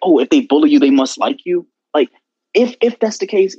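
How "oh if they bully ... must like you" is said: plain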